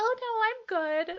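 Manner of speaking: overly nice, very high, very loud, shrill, drawn-out. Retelling a reply to a store worker: imitating own high-pitched voice. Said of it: "my voice immediately, like, went up in pitch".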